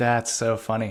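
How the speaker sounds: ordinary talk, nothing marked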